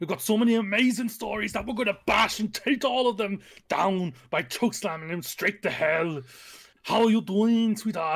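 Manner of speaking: loud put-on Austrian accent. Greeting someone called sweetheart in an Arnold Schwarzenegger accent. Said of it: "I hope you enjoy my amazing accent of the amazing actor that is Arnold Schwarzenegger".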